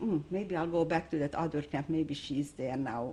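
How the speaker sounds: normal talking voice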